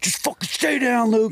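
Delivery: mock heated taunting tone, very high pitch. Retelling a rival's taunt before a fight: imitating heated trash talk. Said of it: "it was getting heated".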